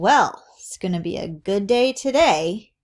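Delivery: sarcastic tone. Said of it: "So that is sarcasm".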